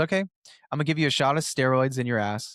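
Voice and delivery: ordinary talk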